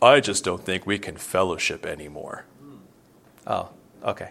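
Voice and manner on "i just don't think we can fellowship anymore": mock-smug, put-on smug tone. Retelling a husband's words at their table, imitating a smug husband. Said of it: "the husband was so smug".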